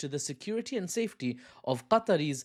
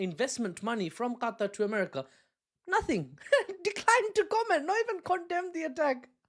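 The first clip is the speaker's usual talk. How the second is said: very high-pitched, words broken by laughter; 11 semitones higher than usual. Speaker reacting to news they find insane, laughing while talking. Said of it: "Why am I laughing?".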